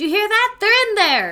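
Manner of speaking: very loud, very high-pitched yell. A player's character calls out to someone behind a door, shouting. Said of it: "I'm gonna shout".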